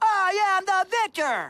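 slow wrestler-style yelling. Explaining a favorite wrestler's post-win catchphrase, doing the Victor the Victor yell. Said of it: "he stands on the ropes and yells".

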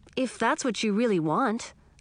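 plain reading voice

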